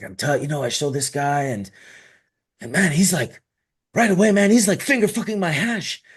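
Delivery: eager, excited, put-on Cuban accent, swooping. Retelling how Cuban Grower reacted on first meeting Frenchie Cannoli: imitating Cuban Grower's Cuban accent. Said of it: "he's in his Cuban accent".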